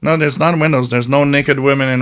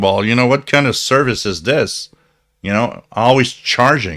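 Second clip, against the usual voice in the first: ordinary talk, nothing marked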